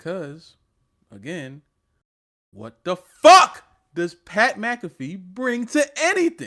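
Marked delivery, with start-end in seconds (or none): 2.5-6.5 very loud, very slow, climbing angry scream. Ranting that a sports podcaster brings nothing: screaming outburst. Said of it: "I apologize for my screaming".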